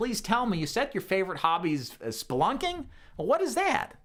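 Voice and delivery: intrigued, interested tone. Demonstrating phone tonality with a question to a client: intrigued, interested tone. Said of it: "I want to sound intrigued and interesting".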